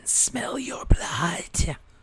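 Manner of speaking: hissed voice. A game master voices a character who hisses at the player, hissing. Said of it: "he hisses at you".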